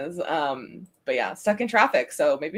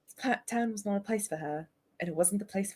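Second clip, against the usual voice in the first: put-on British accent, much quieter; 3 semitones higher, 10 dB quieter than usual. Reading a line aloud again after agreeing to do it British; British accent. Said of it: "Let's do British then".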